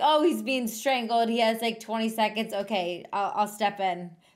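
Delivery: plain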